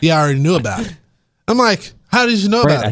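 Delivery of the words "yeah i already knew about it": little, light sarcastic tone. Speaker retells dad's reply after being sent a movie link, mimicking dad's sarcasm. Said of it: "in his little sarcastic way".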